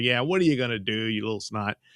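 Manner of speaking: acted-out scornful, mocking jeer through a laugh. Retelling a film scene where a man mocks a boy: imitating someone laughing mockingly. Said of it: "starts laughing at him".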